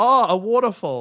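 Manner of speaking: full of innocent awe. Talking about floating up a river into space, said with childlike wonder. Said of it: "You said that with such childlike wonder".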